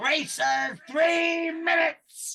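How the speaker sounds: put-on shrill, booming, very loud, very high old-goblin shout. Describing an old goblin at a cart race, speaker mimics him: imitating a loud old goblin. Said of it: "he's got a loud, loud voice".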